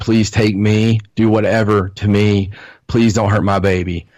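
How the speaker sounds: acted-out screaming, sobbing, tearful crying. Recounting a past experience, acting out her own pleas: retelling her tearful begging. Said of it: "I'm screaming and crying and begging".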